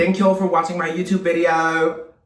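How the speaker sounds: fake, put-on British accent pitched very high. Closing a YouTube video by thanking viewers, in a put-on British accent. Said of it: "That was British, love".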